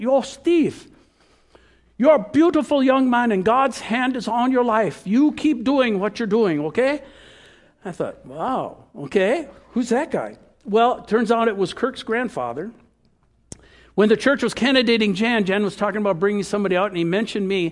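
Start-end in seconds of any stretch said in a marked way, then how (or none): 0.0-7.0 put-on old man's voice with Swedish accent. Retelling an old man's words to him after he finished, in a Swedish accent. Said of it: "the Swedish accent".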